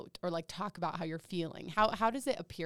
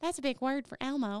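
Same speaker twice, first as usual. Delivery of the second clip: put-on Southern character voice, much higher; 6 semitones higher, 4 dB louder than usual. Redoing a joke line for the others, in a Southern Elmo voice. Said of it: "was Southern Elmo".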